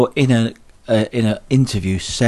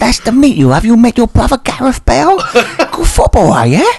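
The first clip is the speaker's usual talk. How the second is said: put-on Chinese accent, very high-pitched, loud; 13 semitones higher, 7 dB louder than usual. Teasing the other speaker about how they said a name, mock Chinese accent. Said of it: "Why do you say it like a Chinese man?".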